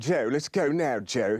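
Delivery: put-on low, deep voice. Recalling the impressions he used to do: James Mason voice. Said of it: "He has that lower voice".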